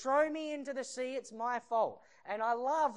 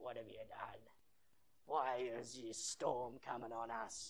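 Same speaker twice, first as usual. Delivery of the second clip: mock very low, very quiet sailor growl, rising; 11 semitones lower, 12 dB quieter than usual. Acting out frightened seamen in a storm turning on the man who drew the short straw, growling. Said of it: "growling at him".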